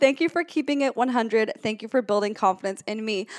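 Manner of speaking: ordinary delivery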